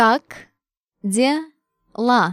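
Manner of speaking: slow, careful, deliberate, drawn-out delivery. Repeating a phrase for learners: said slowly. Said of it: "One time, slowly".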